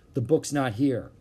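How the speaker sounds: ordinary delivery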